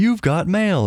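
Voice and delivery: high, automated, recorded computer alert voice. Recalling early internet email alerts: imitating the AOL "You've got mail" voice. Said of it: "a really good impression of "You Got Mail."".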